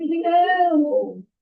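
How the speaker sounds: high eerie spooky voice, drawn out. Explaining a calculation to listeners, saying one phrase: spooky voice. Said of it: "say everything else in a spooky voice".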